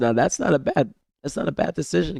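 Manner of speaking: voice cracking mid-line. Judging a call in a game, voice cracking. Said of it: "my my voice is cracking again".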